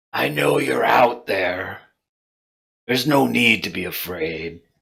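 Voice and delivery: hoarse, rasping creature voice. Narrating a game, voicing a creature that stands and calls out, raspy voice. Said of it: "speaks out in kind of a raspy voice".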